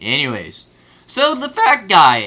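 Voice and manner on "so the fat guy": voice cracking very high, slower and louder. Introducing the next topic after a transition, voice cracking. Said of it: "what a voice crack".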